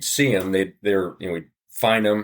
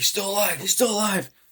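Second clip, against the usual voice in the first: mock, very high-pitched, urgent-sounding shout; 12 semitones higher than usual. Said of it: "and he's yelling".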